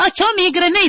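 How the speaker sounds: mock unmanly, high shrieking voice.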